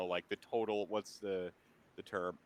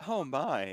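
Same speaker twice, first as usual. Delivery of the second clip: put-on character voice, higher and louder; 4 semitones higher, 4 dB louder than usual. Voicing a character greeting the player: Andrea's cadence. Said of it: "I'm gonna try to get her cadence down".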